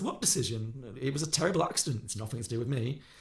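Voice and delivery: ordinary talk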